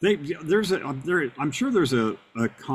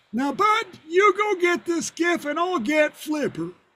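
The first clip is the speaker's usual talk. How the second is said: put-on very high old man voice with heavy breathing. Show how the actor who played an old geezer on Flipper talked, in an Andy Devine voice. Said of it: "but his voice was like this".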